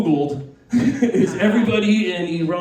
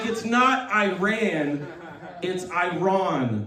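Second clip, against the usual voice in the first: put-on very slow, pedantic know-it-all tone, Iran drawn out; 6 dB quieter than usual. Mocking people who correct pronunciation, imitating a pedantic correction. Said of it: "phonics police out there correcting people".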